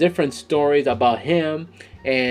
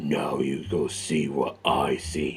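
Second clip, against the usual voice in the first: very low, hushed, put-on deep voice; 11 semitones lower, 9 dB quieter than usual. Quoting a line a movie character always says, in his deep voice. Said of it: "this one he uses like deep voice".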